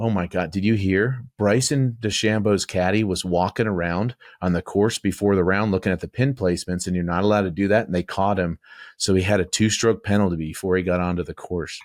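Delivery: ordinary talk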